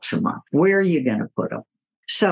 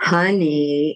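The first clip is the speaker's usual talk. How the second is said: put-on sharper tone of voice. Retelling week three of asking a partner to clean up books: imitating a changed voice tone. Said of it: "the voice tone has changed".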